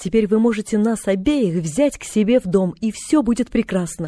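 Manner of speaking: plain reading voice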